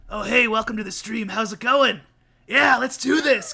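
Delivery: loud, rougher, gruff put-on streamer voice. Showing the voice they'd put on when streaming, gruffer sound. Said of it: "Kind of like a more gruff sound to my voice".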